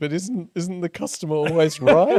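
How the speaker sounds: very loud, high, fake on-the-verge-of-tears pleading. Retelling a plea to a shop seller over a broken item: imitating himself about to cry. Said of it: "about to cry, like, eyes welling with tears".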